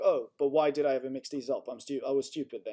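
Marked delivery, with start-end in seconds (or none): none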